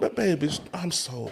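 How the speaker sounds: acted puppy-love sweet talk. Showing how a woman should talk to a man: acting puppy-love sweet talk. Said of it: "start talking like a little".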